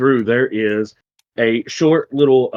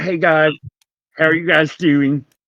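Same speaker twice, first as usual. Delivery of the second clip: put-on high goblin-girl voice, as if through braces; 5 semitones higher than usual. The speaker describes a goblin girl and shows how she talks, in her character voice. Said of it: "she kind of talks like this".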